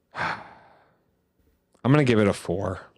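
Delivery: disappointed, let-down tone. Asked on a podcast for his score out of five, sounding disappointed. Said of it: "Why do you sound disappointed?".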